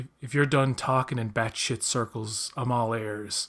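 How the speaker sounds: ordinary delivery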